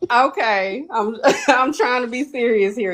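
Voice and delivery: giggly, cracking up, laughing through the words.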